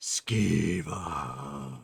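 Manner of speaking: low, rolling, hushed voice. Describing what he hears as something is about to happen, low rolling voice. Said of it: "in kind of a low rolling voice".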